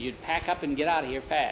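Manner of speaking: ordinary delivery, nothing marked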